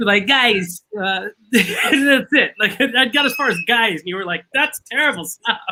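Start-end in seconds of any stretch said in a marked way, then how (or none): 0.3-2.5 bad, botched Boston accent, very slow, drawn out. Show how your attempt would come out: a bad Boston accent like Christopher Walken. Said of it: "if I were to attempt a Boston accent, I'd come out sounding like Christopher Walken".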